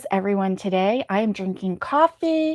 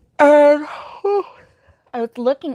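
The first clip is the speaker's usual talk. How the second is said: high, loud talk through a yawn; 7 semitones higher, 5 dB louder than usual. Chatting about an upcoming eye appointment, talking through a yawn. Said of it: "pardon me for yawning".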